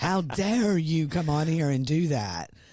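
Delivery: mock-cross, indignant, angry outburst. Reacting to her remarks, the speaker does a mock-angry Karoline Leavitt impression. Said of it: "she sounded pretty angry".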